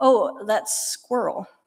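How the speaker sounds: slow, perfectly timed deadpan delivery. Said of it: "with this perfect deadpan timing".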